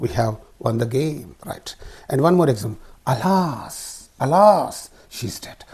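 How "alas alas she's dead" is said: pitch rises then falls on the word alas. Demonstrating an intonation pattern with an example sentence, rise-fall intonation. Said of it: "Therefore called rise fall intonation".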